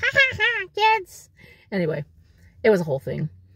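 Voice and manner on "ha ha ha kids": silly cartoon voice, very high, slow, drawn-out. Recalling a college radio bit done with a friend, silly cartoon character voice. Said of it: "we'd do this little silly voice".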